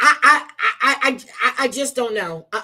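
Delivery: stuttering. Reacting to a Halloween parade video, stuttering. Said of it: "I'm actually stuttering".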